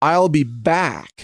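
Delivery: put-on American accent, "back" with open, full ah. Showing how an Austrian's line really sounds when you listen back, with clear American pronunciation. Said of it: "with clear American pronunciation".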